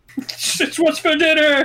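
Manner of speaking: shrill, very high, loud yell. Playing a character in a tabletop game who just shouts: shouting. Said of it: "I'm just gonna shout".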